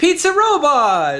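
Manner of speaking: very high, slow, delighted, excited, thrilled cry.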